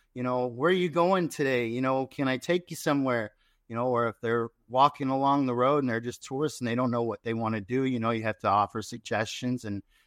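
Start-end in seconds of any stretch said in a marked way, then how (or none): none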